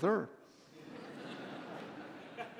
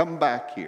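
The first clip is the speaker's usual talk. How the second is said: ordinary delivery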